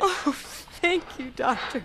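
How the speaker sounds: crying voice, speaking through tears. A patient thanking the doctor after hearing she can go home, crying. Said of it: "Why are you crying?".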